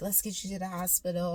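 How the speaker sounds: acted-out, worked-up, excited and eager voice. Retelling a dream of going into labor: imitating excited friends. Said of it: "they're all excited".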